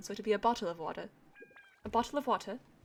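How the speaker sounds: proper British accent. Explaining how they do a British accent, then demonstrating it: proper British accent. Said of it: "when I do try and do a British accent, it's more of the proper one".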